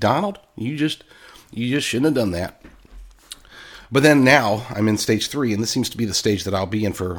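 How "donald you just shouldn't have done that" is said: rural, country Oklahoma accent. Showing the Oklahoma voice of where they grew up, Oklahoma country accent. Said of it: "so that's my Oklahoma voice".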